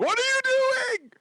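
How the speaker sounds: put-on, very high, shrill, cranky old-man yell. Retelling watching people outside the apartment window: imitating own yelling at people. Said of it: "just trying to yell".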